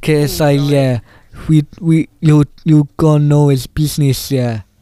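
put-on South African-sounding accent. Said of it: "Why is he South African?".

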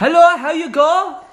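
put-on German accent. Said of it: "You sound as though you're from, uh, from Germany".

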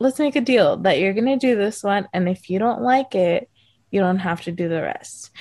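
caring, concerned and charming tone. Retelling a guide's offer to a nervous zipliner: imitating a concerned, charming tone. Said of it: "in such a, like, like, concerned and charmed way".

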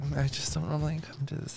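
very quiet, soft, put-on girl voice.

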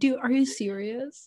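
imitated frustrated voice. Retelling how they answered their sister's question: imitating own frustrated tone. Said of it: "I did it in a very frustrated way".

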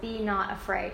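ordinary talk

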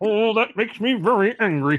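loud cartoon alien voice. Joking with others about Dr. the Pug, doing a Marvin the Martian impression. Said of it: "Was that your Marvin the Martian impression?".

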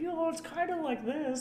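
high, slow, squeaky put-on cartoon mouse voice.

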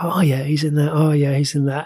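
ordinary delivery

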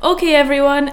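loud booming voice.

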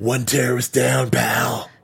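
put-on raspy voice. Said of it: "the raspy voice".

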